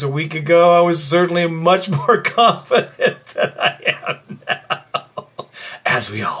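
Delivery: speech laced with chuckling laughter. Talking about how confident everyone felt a week ago, laughing while talking. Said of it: "Sorry I'm laughing".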